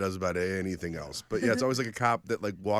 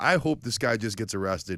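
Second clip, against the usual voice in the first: ordinary delivery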